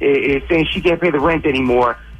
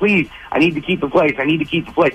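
mock pleading, begging tone. Recounting what a co-tenant on the lease said to the speaker, mock begging. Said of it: "She was begging".

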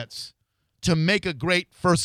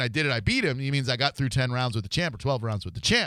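normal talking voice

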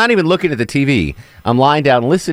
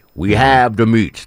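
put-on commercial voice-over announcer voice; 2 semitones lower than usual. Quoting the Arby's commercial line: Ving Rhames voice. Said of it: "Vin Rhames is the Arby's meat guy".

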